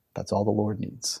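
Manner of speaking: soft, small, solemn little-man voice. Retelling what a man told people on the road, imitating his tiny solemn voice. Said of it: "his tiny little man, solemn voice".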